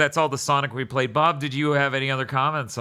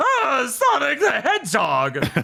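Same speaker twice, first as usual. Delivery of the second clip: very high, swooping cartoon villain voice; 12 semitones higher, 4 dB louder than usual. Describing the main rival's voice in a game: imitating the rival villain's voice. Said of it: "he has to sound like some, someone else, so he's like".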